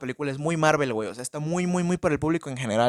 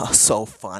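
lower-pitched mocking villain voice; 6 semitones lower than usual. Complaining about a film's villain, imitating a Joker-like villain. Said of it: "y habla así de que".

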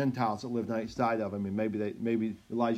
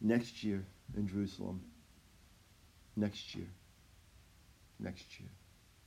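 mock very solemn, grave, almost whispered voice; 4 semitones lower, 10 dB quieter than usual. Speaker acts out the father after the child returns, retelling in very solemn voice. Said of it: "in a very solemn voice".

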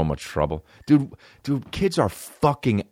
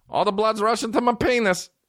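put-on high, innocent-sounding kid voice. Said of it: "Just little kids".

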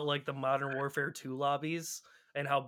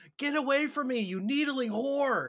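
put-on shrill, very high shriek; 11 semitones higher, 3 dB louder than usual. Retelling a Halo 3 player fleeing in an online match, imitating someone screaming. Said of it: "as he's just screaming".

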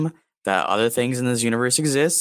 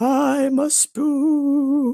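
strange put-on ghost voice, much higher pitch. A ghost, mocked for wearing a sheet, speaks in an odd ghost voice. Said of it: "Why do you talk like that".

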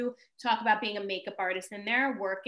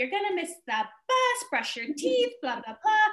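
acted-out, very high-pitched screaming; 9 semitones higher than usual. A mother retells a chaotic morning getting her kids to the bus, retelling her own screaming. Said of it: "while I'm screaming".

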